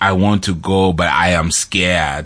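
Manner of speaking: barely noticeable put-on Austrian accent. Recounting a movie scene, quoting Arnold Schwarzenegger: weak Arnold Schwarzenegger impression. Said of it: "my Austrian accent isn't really there".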